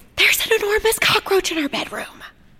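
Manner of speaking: very high-pitched, loud stage whisper. Narrator reading a woman's first words to a man on arriving, whispered. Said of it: "she whispered without saying hello".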